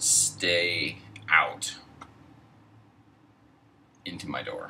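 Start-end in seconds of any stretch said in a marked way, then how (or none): none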